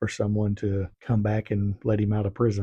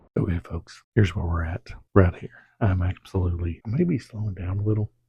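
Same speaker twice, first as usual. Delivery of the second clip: hushed whispering voice; 2 semitones lower than usual. Recording very early while the family is asleep, whispering. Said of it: "I'm sorry I'm whispering".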